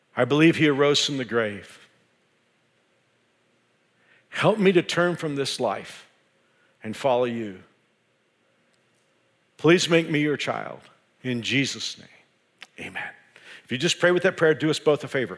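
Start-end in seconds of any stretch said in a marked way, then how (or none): 0.2-13.1 slow, deliberate, unhurried, word by word. Leading listeners in a prayer they can repeat: slowly. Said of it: "I'll pray this prayer slowly".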